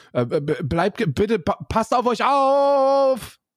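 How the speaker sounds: very high, nervous stammer with stumbling restart. Signing off to viewers while admitting to getting nervous; nervous stuttering. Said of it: "jetzt muss ich hier fangen an zu stottern, weil ich nervös werde".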